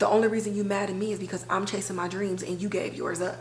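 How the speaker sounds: usual speaking voice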